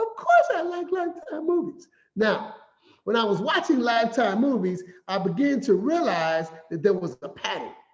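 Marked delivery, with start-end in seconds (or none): 0.0-1.9 very high, eager put-on voice, jumping way up. Retelling his answer to a young lady, high voice. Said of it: "I got the high voice and said".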